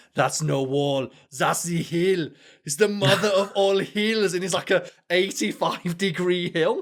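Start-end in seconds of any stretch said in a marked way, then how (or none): 0.2-4.4 put-on German-accented delivery. Retelling an anime scene, quoting a wrestler: German accent. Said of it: "a German accent".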